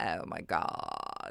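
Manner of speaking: soft, breathy creaky vocal fry, almost whispered. Explaining vocal fry, the speaker demonstrates how some teenagers talk: vocal fry. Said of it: "an annoying way that some teenagers like to talk".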